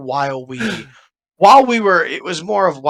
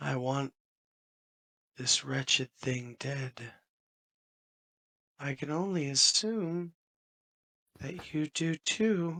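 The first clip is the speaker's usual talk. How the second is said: barely audible, very quiet whisper; 17 dB quieter than usual. A player character speaking quietly to a talisman, whispering. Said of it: "just whispering".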